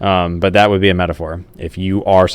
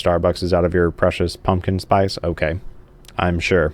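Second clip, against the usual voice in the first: ordinary delivery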